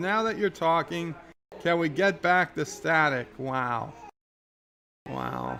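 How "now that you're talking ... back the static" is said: ordinary talk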